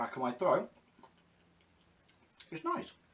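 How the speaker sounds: words spoken around a mouthful of food. Tasting a chutney and reviewing it, talking with mouth full. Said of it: "Excuse me talking my mouth full".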